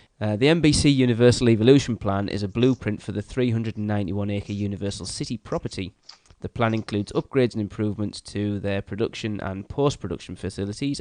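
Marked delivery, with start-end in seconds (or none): none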